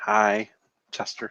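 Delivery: timid, shy voice. Greeting the co-host at the start of the episode: timid. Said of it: "Why are you so timid".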